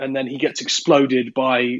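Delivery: ordinary talk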